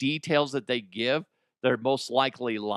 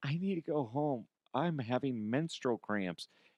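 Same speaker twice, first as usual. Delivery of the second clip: put-on tearful, crying, pleading voice; 9 dB quieter than usual. Retelling how a worker asked to go home, imitating someone crying. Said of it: "she starts crying".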